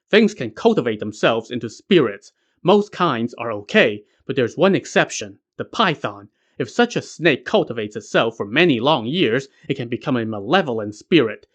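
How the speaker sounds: usual speaking voice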